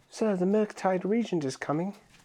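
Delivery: high, put-on old England peasant boy voice. Joking about a card name, voicing a peasant kid in old England: peasant kid in old England voice. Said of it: "like a peasant kid in, like, old England would say".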